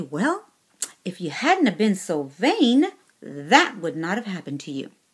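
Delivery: severe, stern, reproachful voice with swooping pitch. Recounting what a visitor said at their hospital bedside, imitating a stern voice. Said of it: "she says it with a stern voice".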